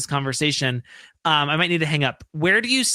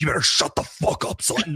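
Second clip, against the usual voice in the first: put-on deep, nasty, dropped tough-guy voice. Imitating Erica when she gets nasty, in Erica's deep voice. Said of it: "I love when she gets in that deep voice, like".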